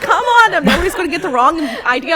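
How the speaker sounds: competitive shout, very high and very loud. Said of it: "I'm out there yelling".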